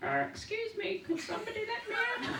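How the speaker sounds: tiny, very high-pitched, muffled little voice. Retelling hearing the person stuck inside the Dalek: imitating a little muffled voice. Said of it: "a little muffled voice saying".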